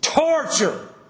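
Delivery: torture, heavily stressed. Speaker repeats a word to make a point: strong emphasis on torture. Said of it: "I'm saying that with an emphasis".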